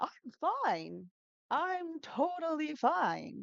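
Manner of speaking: very high, very slow, swooping, drawn-out sing-song. Teaching students to copy a man's line, imitating his super high intonation. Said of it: "He has these super high intonations".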